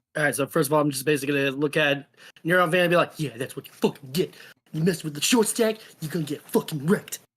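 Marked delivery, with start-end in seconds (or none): 3.1-7.1 smug, gloating under-the-breath mutter, meant to be heard. Voicing a character taunting a beaten foe: muttering loudly under breath. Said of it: "saying under my breath, loud, loud enough to where everybody can hear me".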